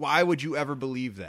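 normal talking voice

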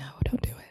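hushed, unvoiced, soft whisper. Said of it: "I remember seeing it and being like".

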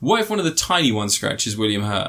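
ordinary talk

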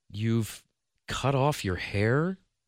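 slow, labored, halting, struggling delivery. Jim, hearing Della say it's Christmas and to be happy, asks slowly. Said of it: "Jim asked slowly".

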